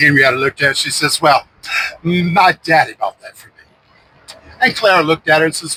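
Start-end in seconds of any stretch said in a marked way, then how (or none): 1.2-3.5 put-on Savannah society accent. Retelling a stroll down the street, the speaker quotes Henrietta speaking to another woman: Southern belle accent. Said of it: "their Southern Belle Savannah accent".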